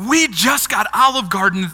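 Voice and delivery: play-acted thrilled, very excited, eager tone. Recalling the people who took them to lunch, imitating their very excited tone. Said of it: "in very excited tones".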